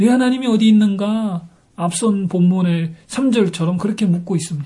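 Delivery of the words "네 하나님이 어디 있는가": high, mocking, offhand tone with a sneer. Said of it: "자신을 비방하면서".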